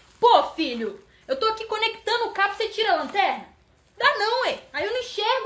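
loud, high, exasperated bickering tone.

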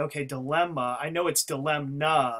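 plain

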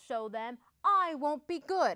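ordinary delivery, nothing marked

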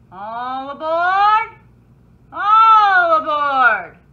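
booming, very loud, very slow, drawn-out call. A narrator reads the conductor calling out at the station; shouted. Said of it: "the conductor shouted".

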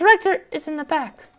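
tiny, dainty, petite, very high voice. Reading an old lady's lines aloud, in a petite old-lady voice. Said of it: "so I'm gonna do petite voice".

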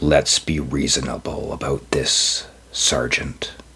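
slow voice just short of a growl. A narrator reads the lawyer-thing speaking to the sergeant, voice just short of a growl. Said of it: "He knew this lawyer, this thing".

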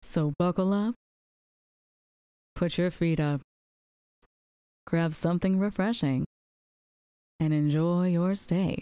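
put-on smooth, late-night radio-host whisper. Opening a mock late-night show while playing: put-on smooth late-night whisper. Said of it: "we are whispering into the microphone".

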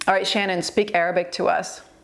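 normal talking voice

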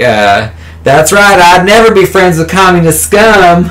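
put-on slight country accent, pitched high. Retelling what the all-American girl said after the fight, in a little country accent. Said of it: "she has like this little country accent".

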